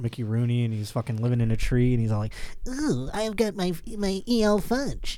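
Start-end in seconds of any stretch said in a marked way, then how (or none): 2.7-5.2 drawn out slowly with a high pitch. Mocking the cookie elf from an old commercial: imitating the Keebler elf. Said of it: "I think I'm doing a pretty accurate".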